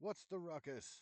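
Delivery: high, ringing, yelled call. Voicing a guard approaching the players who shouts out: shouting. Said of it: "he's coming toward you and he shouts out".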